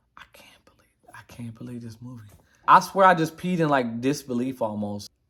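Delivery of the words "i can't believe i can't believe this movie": put-on mutter under breath, lower and quieter. Retelling walking to the bathroom after the movie, imitating muttering under breath. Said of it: "talking to myself, like, under my breath".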